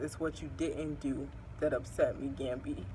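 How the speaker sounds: soft, hushed, dramatic line reading.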